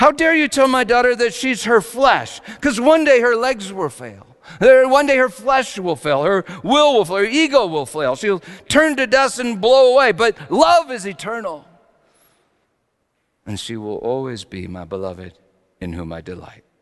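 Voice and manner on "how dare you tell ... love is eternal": play-acted furious scolding, very high, very loud. Mother recalling what she almost said aloud to her daughter's doctor, retelling an angry rebuke. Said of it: "getting so angry and almost saying, like, out loud".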